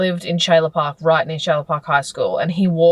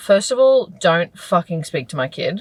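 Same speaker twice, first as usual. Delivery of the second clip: ordinary talk, nothing marked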